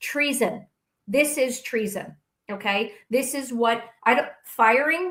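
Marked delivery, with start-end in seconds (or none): 0.0-2.2 very slow, deliberate, each word laid out. Arguing a point to another speaker, very, very slow. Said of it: "Let me say it very, very slowly for you".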